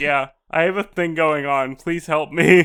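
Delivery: put-on deadpan delivery. Retelling how characters answered the gorilla antics: imitating a deadpan delivery. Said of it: "really deadpan about it".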